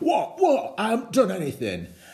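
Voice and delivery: enraged, shrill, very loud and high shout. Speaker retells a seated man whose fist came close to the speaker's face; retelling an angry shout. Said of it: "he angrily said in a very loud voice".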